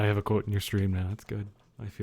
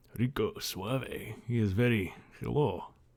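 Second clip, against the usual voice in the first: slow, put-on Russian accent. Speaker describing a man's vibe, in a Russian accent. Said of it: "I just did a Russian accent".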